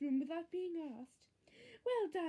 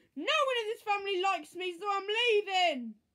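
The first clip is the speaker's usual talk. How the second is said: very loud, full-throated scream; 4 semitones higher, 9 dB louder than usual. Henry, sent to his room by Mum, screaming. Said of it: "screamed Henry".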